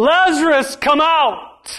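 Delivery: mock commanding, loud, high-pitched shouted call. Retelling Jesus calling Lazarus at the tomb, acting out a loud shout. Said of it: "with a loud voice, Jesus shouts".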